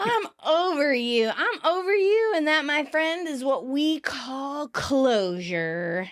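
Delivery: put-on tipsy drunk voice, final sound drawn out. Acting out Rachel's answering machine message on her date: drunk Rachel voice. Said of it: "Oh, I am drunk".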